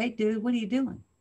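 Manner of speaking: ordinary talk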